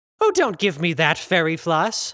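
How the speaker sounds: whining out in annoyance. A narrator voices a performer answering a fellow performer before the show, whining in annoyance. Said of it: "The tallest of the 3 whined out in annoyance. His upper set of arms folded against his chest, while the lower set balled their fists. Out of the trio, he was the only one who had 4 arms. / The tallest".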